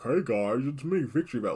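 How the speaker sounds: silly buck-toothed creature voice. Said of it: "big old silly brain guy. Who's going like".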